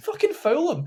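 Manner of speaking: mock very high, shrill scream. Recalling watching the first half on TV, retelling screaming at the telly. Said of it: "I'm screaming at the telly".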